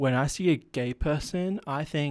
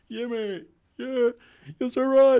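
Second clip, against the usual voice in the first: very high, sarcastic, mocking put-on voice; 10 semitones higher, 4 dB louder than usual. Agreeing with an insult as a joke, mocking put-on voice. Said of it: "Do you know what that voice is reminding me of?".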